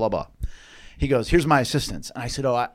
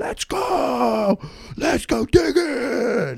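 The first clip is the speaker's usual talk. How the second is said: mock scream, much higher and slower; 13 semitones higher than usual. Retelling how a pumped-up coach screamed to his players, imitating a coach screaming. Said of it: "he's screaming".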